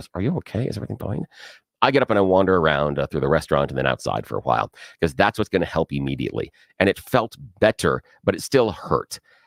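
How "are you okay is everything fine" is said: soft, murmured voice under the breath. Retelling a wife's question across the restaurant table: imitating someone asking under breath. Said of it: "under her breath".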